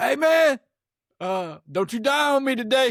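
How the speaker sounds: very high, slow, drawn-out holler. Retelling what the neighbor on the porch yells: imitating neighbor yelling. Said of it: "he always yells at me and said".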